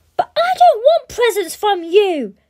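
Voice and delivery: very high, shrill, very loud bellowing roar. Narrator reading a story, voicing a son answering his parents: roaring. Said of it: "roared Bradley".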